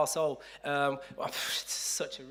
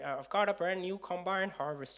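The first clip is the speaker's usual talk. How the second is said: put-on Bristol accent, quieter; 4 semitones higher, 4 dB quieter than usual. A host tries out a line in a Bristol accent. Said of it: "That's Bristol".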